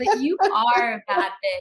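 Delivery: emphatic full-on yell. Speaking to the person across from them, yelling. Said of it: "I know I'm yelling".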